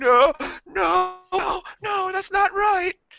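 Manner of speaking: acted, very high, slow, drawn-out tearful sobbing. Retelling waking up scared of a vampire: imitating own crying plea. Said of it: "I started crying instantly".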